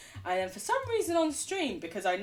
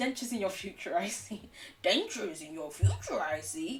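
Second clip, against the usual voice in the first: bad put-on wise sage creature voice; 5 semitones lower than usual. A speaker who admits they can't do voices tries a terrible Yoda impression. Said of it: "That was a terrible Yoda".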